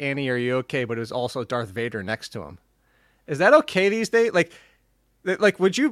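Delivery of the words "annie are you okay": normal talking voice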